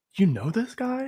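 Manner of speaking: very high, quiet, hushed aside. In character, quietly asking a companion about a stranger: quietly. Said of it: "quietly says to Saul".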